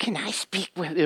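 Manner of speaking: eerie, creepy low-key unsettling voice. Retelling a midnight phone call, imitating the caller: creepy voice. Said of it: "there was this creepy voice".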